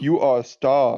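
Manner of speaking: bad, failed put-on British accent. Pretending to be a Hot Pocket judge, in a bad British accent. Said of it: "can't do a British accent".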